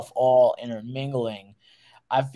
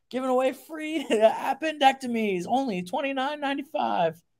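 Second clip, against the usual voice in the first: put-on barker voice, much higher, quieter; 13 semitones higher, 4 dB quieter than usual. Riffing back and forth with another speaker, in a carnival barker voice. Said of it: "that Carney Barker voice".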